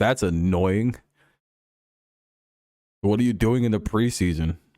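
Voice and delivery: irritated, fed-up broadcast announcer voice. Retelling the announcer's reaction to a preseason pitching change: imitating an annoyed announcer. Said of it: "the announcer even got annoyed".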